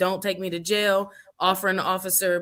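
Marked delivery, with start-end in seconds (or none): 0.0-1.1 mock pleading, imitated begging tone. Retelling a runner pleading with a police officer: imitating someone begging.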